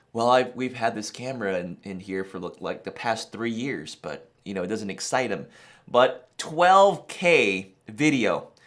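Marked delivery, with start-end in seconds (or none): 0.2-5.5 softer, offhand, nonchalant tone. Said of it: "he does it so nonchalantly".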